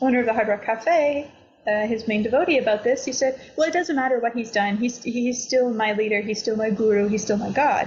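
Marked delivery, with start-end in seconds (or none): none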